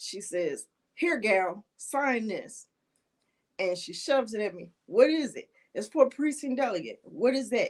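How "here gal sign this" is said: slow, rasping, rough-edged woman's voice. Retelling how Abena pushed a paper at the speaker to sign, in Abena's raspy voice. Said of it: "in her raspy voice".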